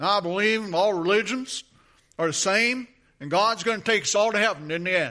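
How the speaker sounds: loud, heavily laid-on put-on Cajun accent. Retelling what a man said while talking about the Bible, in a Cajun accent. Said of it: "how was my Cajun accent?".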